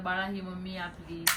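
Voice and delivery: ordinary delivery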